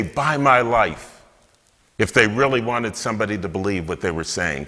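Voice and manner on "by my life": slow, earnest, passionate delivery. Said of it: "they would say this passionately".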